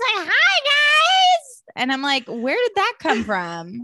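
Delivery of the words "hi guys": very high shriek with guys drawn out. Describing how a woman's voice got higher this season, imitating her high shrieky voice. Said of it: "She's like fully up here this season".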